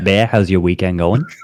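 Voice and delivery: put-on Boston accent. Asking another speaker how the weekend was, on request: Boston accent. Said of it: "I need a good Boston accent to ask me how my weekend was".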